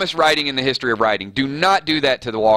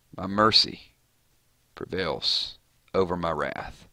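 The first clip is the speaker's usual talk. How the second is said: put-on sighing tearful voice, lower and quieter; 7 semitones lower, 8 dB quieter than usual. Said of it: "does that little sigh and a smile and a tear".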